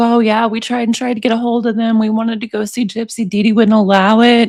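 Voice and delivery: ordinary delivery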